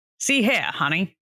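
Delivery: put-on transatlantic accent. Showing how to do the transatlantic accent, transatlantic accent. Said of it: "like the transatlantic accent?".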